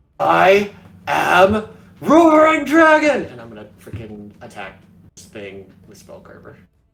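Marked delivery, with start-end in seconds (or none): 0.2-3.2 very loud, very high, very slow drawn-out war cry. Screaming out a battle cry in character before attacking: screaming a battle cry. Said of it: "I'm going to scream out in Draconic".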